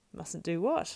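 surprised tone. Sam asks Gollum what the hobbits mustn't do; surprised. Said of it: "asked Sam in surprise".

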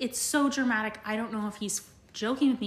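plain

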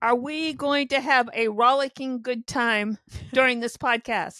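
loud, full-throated shout. A podcast host asking the co-host a question about the podcast, shouting. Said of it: "I don't know why I was shouting it".

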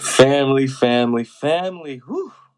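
very loud, thrilled, excited voice. Open a very special episode long in the making for your listeners, in a very excited voice. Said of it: "if you cannot tell by my voice, I'm very excited".

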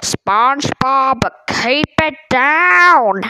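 swooping, grumpy scolding tone, stretched out, falling down. Retelling a story in which Squidward calls out to SpongeBob, doing a Squidward yell. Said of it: "I'm good at voice impressions, so I do the voice impressions".

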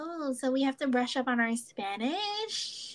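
put-on flat reality-star voice. Retelling a TikTok parody of the Kardashians: imitating Kourtney Kardashian. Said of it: "she plays Kourtney, and she's like".

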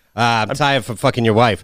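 ordinary delivery

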